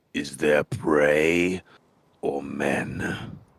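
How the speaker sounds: very slow, deep-throated, low guttural voice. Narrating a scene to players, voicing an unseen voice from the east in a guttural voice. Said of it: "just a guttural voice come out".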